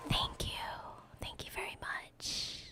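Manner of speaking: very quiet, barely voiced, hushed whisper. Streamer thanking chat for gifted memberships, whispering. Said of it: "I don't know why I'm whispering".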